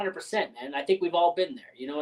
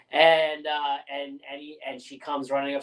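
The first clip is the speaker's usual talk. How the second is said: plain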